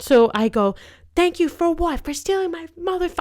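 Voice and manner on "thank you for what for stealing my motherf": mock shrill, very high screaming outburst. Retelling telling off a phone thief: retelling a scream. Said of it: "I was screaming at her".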